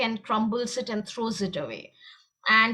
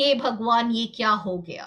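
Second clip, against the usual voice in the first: ordinary talk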